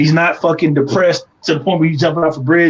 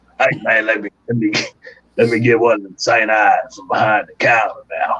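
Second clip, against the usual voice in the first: practiced, low, put-on old man character voice; 7 semitones lower than usual. Voicing the character for an episode buying beer: practiced old man character voice. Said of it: "I've been practicing this voice".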